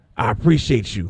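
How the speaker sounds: fake hype-man DJ voice. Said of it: "in my best [name] voice".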